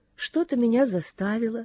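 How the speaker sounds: plain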